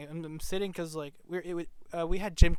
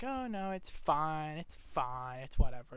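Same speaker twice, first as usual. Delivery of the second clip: very slow, drawn-out, sassy, dismissive tone; 3 dB quieter than usual. Retelling a friend's reply to an offered make-up gift: imitating a sassy reply. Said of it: "It's all sassy".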